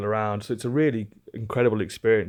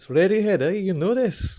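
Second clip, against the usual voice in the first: bad fake Scottish accent, much higher; 10 semitones higher than usual. Retelling what a Scottish man said about the music playing, in a really bad Scottish accent. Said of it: "my really bad Scottish accent".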